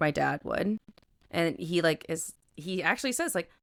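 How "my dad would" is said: mock flat, emotionless deadpan voice, lower. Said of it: "with, like, no emotion".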